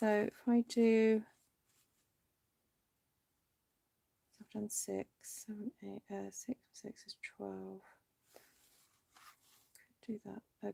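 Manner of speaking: quiet muttering to self. Speaker working out cutting measurements aloud, a little quieter, to self. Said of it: "Sorry if I went a little bit quieter".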